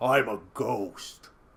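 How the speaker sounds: put-on girl's voice, oddly heavy, deep and low. Retelling a trick-or-treating girl's answer at the door, in a deep voice. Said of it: "That girl's got a deep voice".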